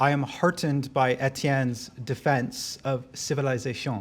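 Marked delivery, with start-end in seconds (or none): 1.1-4.0 put-on French accent. Giving a speech at a political event, a phrase in a french accent. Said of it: "That's my French accent".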